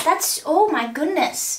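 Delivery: natural Canadian accent coming through in speech. Speaker reacts while trying to recreate a hairstyle, canadian accent. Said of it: "the Canadian accent just came out".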